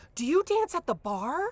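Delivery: put-on high, eager, excited little boy voice. Retelling a preschool boy's question to a girl: imitating an excited little boy. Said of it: "really excited, he goes".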